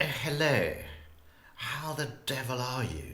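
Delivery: upper-crust posh British accent. Showing what an upper-crust British accent would sound like: upper-crust British accent. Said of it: "If it was upper crust, it'd be".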